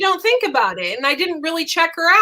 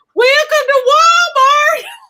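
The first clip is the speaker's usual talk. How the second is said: very high-pitched, shrill, blaring and loud; 11 semitones higher, 7 dB louder than usual. Telling a story, the speaker acts out a Walmart greeter's welcome: imitating a loud greeting. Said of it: "And she said it so loud".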